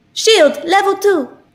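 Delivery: very high video game character voice. Showing the other speaker a voice of the girl from Apex Legends: imitating the Apex Legends girl. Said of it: "I can do a voice really good".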